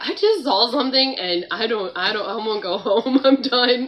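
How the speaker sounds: tearful crying outburst, through streaming tears. Speaker recalls running into class in tears after seeing something, retelling own crying. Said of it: "I'm streaming with like tears".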